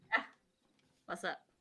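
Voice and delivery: talking with mouth full of food, chewing. Player answers after being called by name, talking with mouth full. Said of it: "Was your mouth full?".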